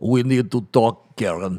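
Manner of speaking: cat voice with a Russian accent. Voicing a cat sitting down for a talk, in a Russian cat voice. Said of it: "Russian cat".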